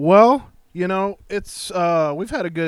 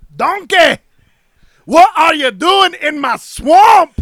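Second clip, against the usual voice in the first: loud, pitched-up ogre roar; 11 semitones higher, 8 dB louder than usual. Answering a request to do Shrek: Shrek voice. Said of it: "can we hear a Shrek?".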